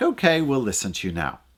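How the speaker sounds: normal talking voice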